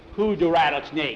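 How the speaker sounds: plain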